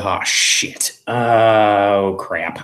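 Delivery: very slow grumbling mutter, "oh" drawn out. A player voicing his character finding a dead end, muttering under his breath. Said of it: "just mutter under his breath".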